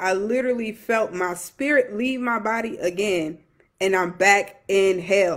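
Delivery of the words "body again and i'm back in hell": ordinary talk, nothing marked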